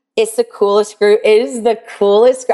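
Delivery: voice catching, choked-up emotional break. Praising the group of owners in the program, getting emotional. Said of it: "I get so emotional".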